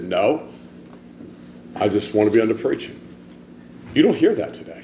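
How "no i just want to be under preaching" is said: acted dry, dead-straight, flat deadpan delivery. Retelling a man's reply to a sarcastic woman at a meeting, deadpan. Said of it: "Peter deadpanned".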